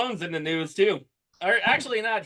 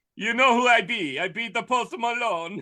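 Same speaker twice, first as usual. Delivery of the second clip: put-on poorly done, sloppy Jamaican accent; 4 semitones higher than usual. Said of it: "not even a good Jamaican accent".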